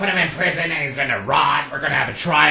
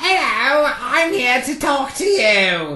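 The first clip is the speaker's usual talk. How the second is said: silly little guy voice, much higher, slower. Retelling how a little guy spoke, in a funny little guy voice. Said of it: "he used a really funny voice".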